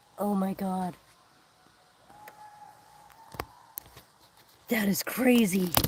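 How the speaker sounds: hushed whisper. Reacting in awe as the temperature drops, whispering. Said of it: "I feel like I have to whisper".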